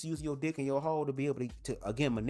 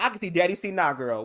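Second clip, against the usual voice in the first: ordinary talk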